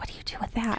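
put-on whispering. Retelling a store visit, speaker acts out asking her companion something, retelling a whisper. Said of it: "i'm whispering to her".

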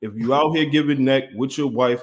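ordinary talk, nothing marked

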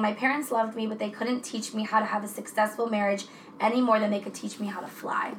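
plain

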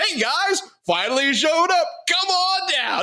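sunny, high, slow, all-chipper voice. Retelling a survivor's call to the others who thought him dead: imitating someone sounding chipper. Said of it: "He's, like, all chipper".

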